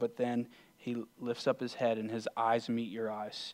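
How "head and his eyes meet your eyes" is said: ordinary talk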